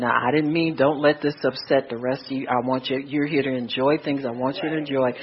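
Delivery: quiet low whisper. Retelling an apology to a nephew after he stormed off: retelling a whisper. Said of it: "I bent down and I whispered to him".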